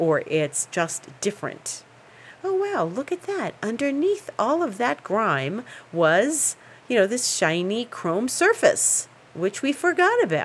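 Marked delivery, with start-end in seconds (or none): 2.4-10.4 high-pitched TV infomercial announcer delivery. Showing a cleaned chrome surface, speaker slips into TV commercial announcer voice. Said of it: "I sound like I'm doing a television commercial".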